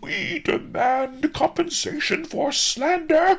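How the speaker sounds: very high, loud howling outcry. Narrator reading the grub's reply to the pursuing neighbors, howled. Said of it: "howled Ma the grub".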